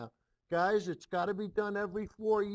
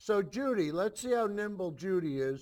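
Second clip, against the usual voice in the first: ordinary delivery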